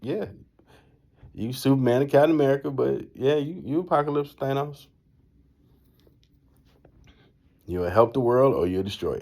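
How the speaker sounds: words broken up by laughter while talking. Retelling what a brother said while laughing: imitating someone laughing while talking. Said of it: "He started laughing like".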